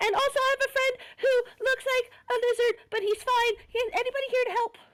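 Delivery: very high, shrill scream. A player character calls for help at a church door, screaming. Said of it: "knocking and screaming".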